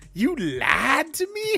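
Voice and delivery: shrill, booming cartoon voice, slow and swooping. Acting out someone's line, done in a Mushu voice. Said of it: "they're doing it with the voice of Mushu from Mulan".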